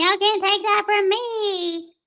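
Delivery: very high-pitched voice, me drawn out. Mimicking the woman from a case just played: imitating her voice. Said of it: "I literally can do her voice".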